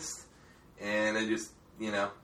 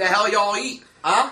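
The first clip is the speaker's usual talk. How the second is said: bad, thick Baltimore accent, very loud and high; 10 semitones higher, 9 dB louder than usual. Playing along in a group Baltimore bit, thick, horrible Baltimore accent. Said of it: "just the thick, horrible Baltimore accent".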